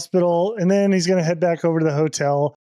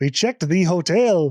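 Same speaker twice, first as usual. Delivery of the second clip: fake Irish accent that sounds Swedish. A speaker retells a reply from Mel while attempting the accent: imitating Mel, bad Irish accent. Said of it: "That's more like Swedish".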